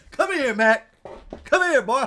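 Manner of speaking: excited calling out, loud and high.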